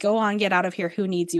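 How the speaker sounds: ordinary talk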